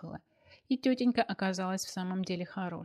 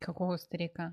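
ordinary delivery, nothing marked

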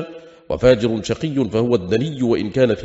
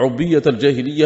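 normal talking voice

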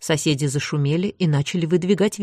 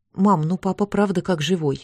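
ordinary delivery

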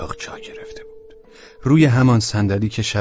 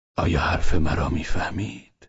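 ordinary delivery, nothing marked

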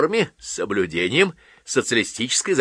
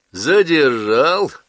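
loud, derisive, taunting tone with pitch rising up; 5 semitones higher, 5 dB louder than usual. Reading Palisadov's question to Vostrikov, asked mockingly. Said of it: "насмешливо спросил Палисадов".

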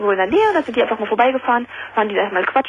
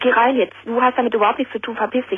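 normal talking voice

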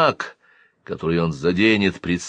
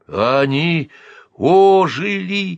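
stuttering, stammering shout, very high pitched; 10 semitones higher, 4 dB louder than usual. Reading a story, a man backs away from mummies that came alive: stammering shout. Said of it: "заикаясь, крикнул Навк".

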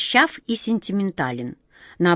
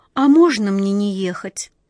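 shy, meek, timid and hesitant little voice; 3 semitones higher, 4 dB louder than usual. Narrating, Nitochka answers the man summoning her to the palace: asked timidly. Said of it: "робко спросила Ниточка".

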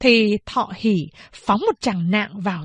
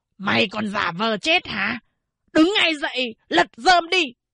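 harsh rasp from a raw throat, rising in pitch; 3 semitones higher than usual. Narrator reads a mother yelling at her husband lying in the sun, hoarse shout. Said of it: "gào lên bằng cái giọng khàn khàn".

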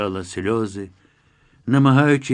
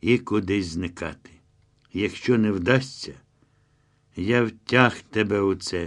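ordinary delivery, nothing marked

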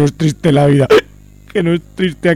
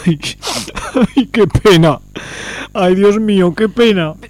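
tearful, weeping, crying voice; 3 semitones higher than usual. In a scene, a man is moved by words written on a slate, crying. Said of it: "¡No llores, Badila!".

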